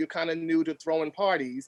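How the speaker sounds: usual speaking voice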